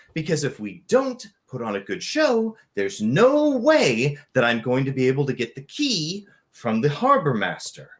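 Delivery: not-so-deep character voice. Redoing a woman character's line after saying the first try was too deep, in a less deep half-orc woman's voice. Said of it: "her voice is not that deep".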